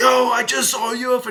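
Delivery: very high, shrill, stretched-out screaming. Retelling going into the gas station to the guy there: retelling own screaming. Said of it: "I went in there screaming".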